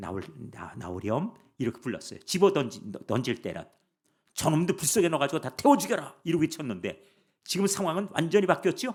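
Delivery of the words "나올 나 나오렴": gentle, soft, affectionate, tender coaxing voice. Retelling how the three men were called out: acting tender and affectionate. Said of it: "아주 다정하게 그냥 이렇게".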